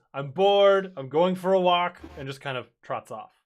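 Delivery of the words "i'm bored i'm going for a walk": very loud, high, slow, drawn-out proclaiming voice. Game master voicing Stick to the players at the cart; very loud. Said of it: "Stick very loudly goes".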